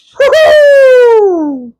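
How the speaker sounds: very high, loud wrestling announcer whoops.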